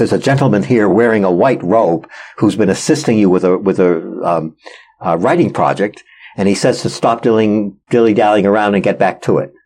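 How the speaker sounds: ordinary talk, nothing marked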